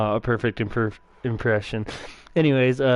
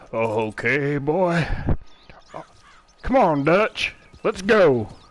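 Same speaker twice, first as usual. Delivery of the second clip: very slow character voice, every word dragged out; 4 semitones higher than usual. Trying to learn how to interpret the character, calling on Dutch, as an Arthur Morgan impersonation. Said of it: "That was my impersonation".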